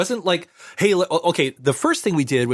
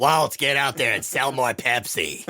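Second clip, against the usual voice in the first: low put-on impersonation voice; 4 semitones lower than usual. Telling a Pepsi story about Walt, quoting Crawford: Harvey Fierstein doing Joan Crawford. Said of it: "That's my Harvey Fierstein doing Joan Crawford impersonation".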